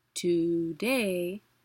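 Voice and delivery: DAY stressed in today, to unaccented. Explaining where the accents fall, the instructor says the example word: stress on DAY in today. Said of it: "that to is unaccented".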